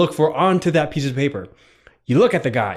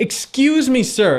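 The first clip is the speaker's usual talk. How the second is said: put-on calmest possible tone, pitched a bit up; 8 semitones higher than usual. Acting out asking a stranger for help when lost: calmest tone possible. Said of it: "in the most calmest tone you have".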